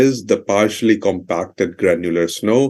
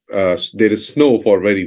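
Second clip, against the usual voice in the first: ordinary talk, nothing marked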